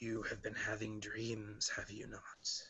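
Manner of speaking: soft, hoarse, deeply rasping voice. Game narrator voicing an unseen figure approaching a kneeling character, in a very raspy voice. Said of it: "he will hear a very raspy voice".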